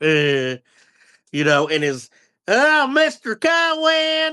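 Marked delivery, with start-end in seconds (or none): 2.5-4.3 very high put-on Texas accent, one word stretched. Imitating the annoying kid from the movie: imitating kid's texas accent. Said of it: "with his Texas accent".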